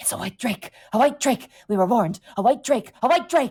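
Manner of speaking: jittery, high, panting rat creature voice. Voicing a frightened were-rat staring at a player: nervous panting rat creature. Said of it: "like, nervously and looks at you, Kel, and goes".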